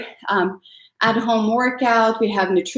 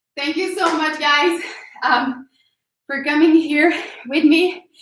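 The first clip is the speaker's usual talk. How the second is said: breathless, higher pitch; 6 semitones higher than usual. Thanking viewers for coming along after a workout, out of breath. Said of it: "super out of breath".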